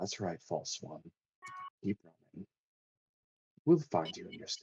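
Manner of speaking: soft, subtle, raspy, hoarse voice. A game master voices a voice the players hear on a breeze: soft, raspy, hoarse voice. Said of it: "the softest, subtlest, but also raspy and hoarse voice".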